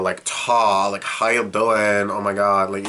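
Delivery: put-on full-on Valley Girl speech. Describing how a cartoon character talks: Valley Girl talk. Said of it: "it's very Valley Girl".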